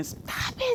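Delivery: mock breathy, hushed, urgent whispered cry. Retelling a violent arrest she witnessed: retelling her own scream. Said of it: "And I'm screaming".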